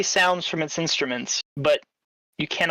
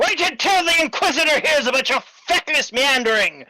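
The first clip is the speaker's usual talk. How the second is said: yelling angrily, higher and louder; 10 semitones higher, 5 dB louder than usual. Voicing an elite guard yelling at his squad below: screaming at the others. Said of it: "screaming at them the whole time".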